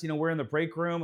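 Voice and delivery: ordinary talk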